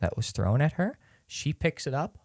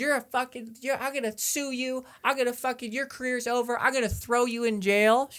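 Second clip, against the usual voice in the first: yelling, higher; 13 semitones higher than usual. Retelling how a heckler pushed out of the venue yelled at the speaker: imitating a woman yelling. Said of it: "She's yelled at me".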